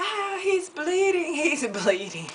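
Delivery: mock dainty, very high little squealing shriek. Telling a story of a man falling, the speaker acts out a woman screaming. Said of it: "starts screaming".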